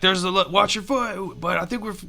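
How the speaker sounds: high shouted yell. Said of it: "kinda yell that back".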